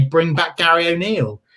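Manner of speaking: usual speaking voice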